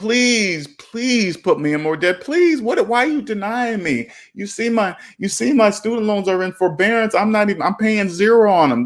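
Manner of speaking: begging, pleading voice. Imitating her begging the bank for more debt: imitating someone begging. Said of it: "she's literally begging".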